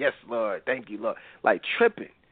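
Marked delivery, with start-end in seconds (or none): 0.0-1.2 put-on laughing speech, lower and quieter. Retelling the woman answering the pastor: imitating someone laughing while talking. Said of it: "start laughing".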